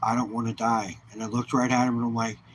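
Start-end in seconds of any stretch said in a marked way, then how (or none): 0.0-1.0 put-on broken words through tears, pleading. Retelling what a father said after a diagnosis: retelling someone crying. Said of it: "and he started crying".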